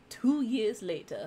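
cartoon title-card announcer voice. Speaker suggesting a time skip in a romance story, SpongeBob narrator voice. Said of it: "in the SpongeBob voice".

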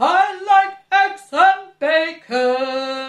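grouchy voice. Showing different voices in a video, the speaker says a line in a rather grumpy voice. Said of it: "the rather grumpy voice".

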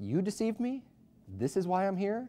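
high, contemptuous, scornful can't-believe-it tone. Acting out people in hell squinting at the devil: acting out contemptuous disbelief. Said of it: "because they can't believe".

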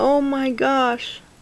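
on the verge of tears. Opening gifts someone sent to her, about to cry. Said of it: "now I'm gonna cry".

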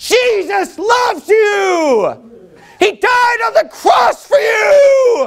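very slow, very high, drawn-out preaching shout. Showing the congregation what yelling a welcome message would sound like: yelling. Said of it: "'cause if I were yelling".

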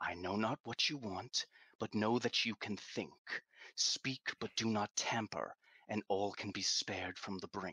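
hushed, whispered words. A man speaks to a stone, whispering. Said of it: "he's whispering to the stone".

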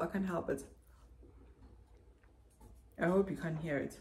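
talking with mouth full. Apologizing to viewers for noise while talking, chewing while talking. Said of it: "you can hear the chewing sound inside my mouth".

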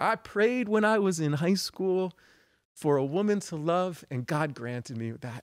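put-on Philadelphia accent. A speaker quoting their grandfather about his wife, in a Philly accent. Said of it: "he'd have this Philly accent".

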